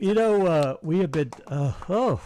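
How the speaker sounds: loud, high speech pulled out of shape by a yawn. Speaker talking with another person mid-conversation, yawning. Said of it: "I'm yawning".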